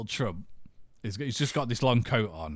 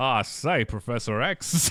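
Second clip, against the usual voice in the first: slow, drawn-out put-on drawl, every vowel stretched; 3 semitones higher, 4 dB louder than usual. Joking about a casting idea, doing Daniel Craig's Knives Out accent.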